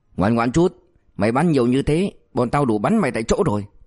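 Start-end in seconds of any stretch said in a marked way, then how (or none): none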